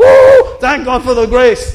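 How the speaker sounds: jubilant, loud, swooping joyful whoop. Acting out believers praising god after heaven: acted joyful shout. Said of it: "you're still going to be shouting".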